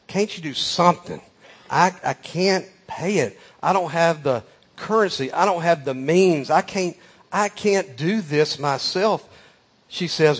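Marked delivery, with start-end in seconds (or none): 0.1-9.2 small, timid, meek pleading voice. Retelling a tearful lady's words to a man, imitating a meek little voice. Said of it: "she speaks to him in this little kind of meek voice".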